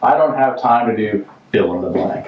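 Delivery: plain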